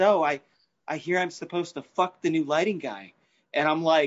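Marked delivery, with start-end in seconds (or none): 0.0-3.1 Hollywood movie-star bombshell voice. Retelling what a performer said while nudging the lighting board: Marilyn Monroe voice. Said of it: "she's talking like Marilyn Monroe".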